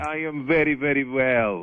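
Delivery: put-on, fake Russian accent. Calling in as Boris the Russian: put-on Russian accent. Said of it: "Let's go to Boris, the Russian".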